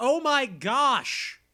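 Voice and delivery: put-on male yelling. Retelling what he did in the story, act out his yell. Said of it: "He yells".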